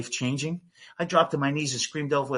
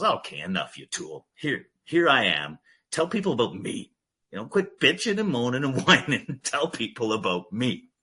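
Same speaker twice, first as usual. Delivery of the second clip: animated scolding tone, pitch swinging and swooping around; 3 semitones lower than usual. Acting out God stepping in to scold: voicing God scolding. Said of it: "and then God comes in and goes".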